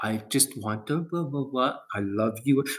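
put-on hushed, very soft, slow, drawn-out soothing voice. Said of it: "when they talk like that".

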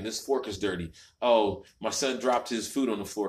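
ordinary talk, nothing marked

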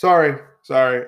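plain

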